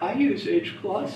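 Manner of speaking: put-on startled, shocked exclamation voice. Recounting how a man reacted to hearing about hclus; mimicking a shocked voice. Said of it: "in sort of a shocked voice".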